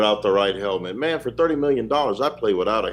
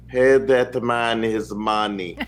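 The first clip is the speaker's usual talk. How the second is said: slow, deliberate, heavy, menacing put-on character voice. Giving Jerry Jones advice after watching Rounders, in Teddy KGB voice. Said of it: "in the voice of Teddy K G B".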